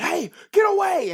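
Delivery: very high, loud scream. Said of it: "as they are screaming".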